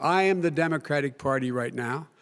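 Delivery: ordinary talk, nothing marked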